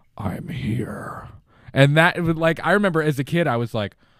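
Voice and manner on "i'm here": hushed, breathy whisper with an echo. Retelling a movie scene where a woman calls out, echoing Freddy voice. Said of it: "like an echoing voice go".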